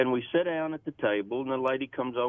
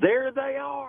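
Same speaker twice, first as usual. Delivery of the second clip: put-on, very high, top-of-lungs shrieking scream; 13 semitones higher than usual. Retelling how a waitress greeted them across the restaurant: imitating a woman screaming. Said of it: "at the top of her lungs, she screams".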